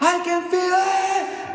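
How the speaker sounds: mock very high, drawn-out scream. Retelling what a man in the room did: imitating someone screaming. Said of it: "And he starts screaming".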